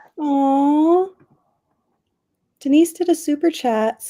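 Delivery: high, gushing, touched delight, excited and drawn-out. Host reacting to a viewer's super chat: voice went high. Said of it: "hear how high my voice went?".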